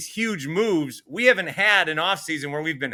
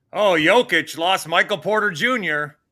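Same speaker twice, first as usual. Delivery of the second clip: plain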